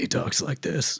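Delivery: slow, croaky, growling voice. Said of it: "The bat voice is, like, just really croaky".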